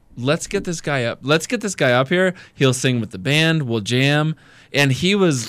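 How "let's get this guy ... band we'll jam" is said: normal talking voice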